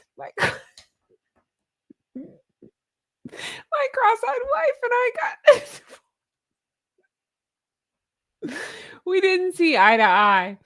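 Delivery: very high giggly talk with swooping laughter. Reading a joke from the comments aloud: laughing while talking. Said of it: "and I can't stop laughing".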